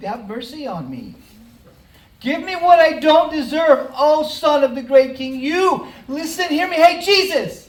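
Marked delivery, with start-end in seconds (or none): 2.2-7.5 loud, high, desperate crying-out yell. Retelling a blind man yelling to Jesus at the top of his lungs: imitating Bartimaeus yelling. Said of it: "he just starts to yell out".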